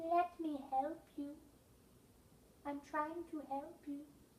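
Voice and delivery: small, raccoony little voice. Retelling talking through Rory's paw under the office door: Rory's small raccoony voice. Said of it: "say in a small raccoony voice".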